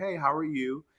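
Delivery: very calm, easy, soft, slightly rising tone. Retelling answering a call from an agency worker, retelling a calm answer. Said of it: "I answered in the most calm".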